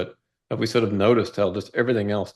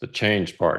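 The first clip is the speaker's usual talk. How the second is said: put-on, very grumpy mock voice. Telling a story about two men, quoting the second one, retelling a very grumpy voice. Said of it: "in a very grumpy voice says".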